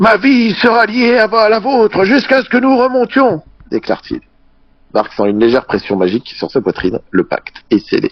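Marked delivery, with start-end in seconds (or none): 0.0-3.4 put-on terrible old man voice, very high and slow. Voicing the headmaster sealing a blood pact: terrible old man voice. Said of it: "tes voix de vieillard sont horribles".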